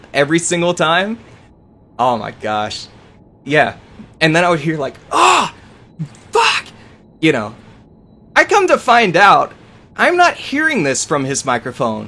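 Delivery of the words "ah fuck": very high-pitched, furious yelled outburst. Retelling what an angry opponent kept screaming in game: imitating someone yelling. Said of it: "this dude is yelling so loud".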